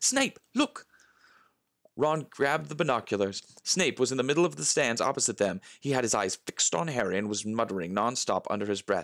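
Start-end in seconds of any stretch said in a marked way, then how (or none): 0.0-0.9 gasping, much higher. A girl spots someone in the stands and alerts her friend; gasping. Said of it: "Hermione gasped".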